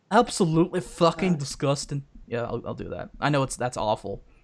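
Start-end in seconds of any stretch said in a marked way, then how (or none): 0.1-2.0 put-on poor Scottish accent, higher pitch. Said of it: "Not a very good ac-, Scottish accent".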